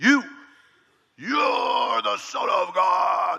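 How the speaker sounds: put-on possessed, demonic voice. Reading verse 11 aloud, voicing the unclean spirits falling before Jesus, in a demon voice. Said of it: "That's demon voice right there".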